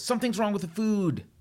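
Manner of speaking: very high-pitched, complaining yell. Retelling how a guy stood up in a restaurant: imitating someone yelling. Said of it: "he yells".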